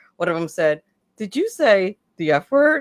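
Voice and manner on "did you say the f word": put-on soft quiet voice, higher. Retelling a producer's question spoken in an earpiece: imitating a soft voice. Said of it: "very softly in my ear".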